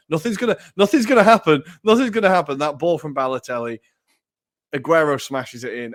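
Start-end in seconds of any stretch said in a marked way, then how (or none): 0.1-2.5 mock desperation creeping in, very high and raised. Retelling an uncle watching the play build: imitating a desperate voice. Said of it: "the desperation kind of getting in his voice".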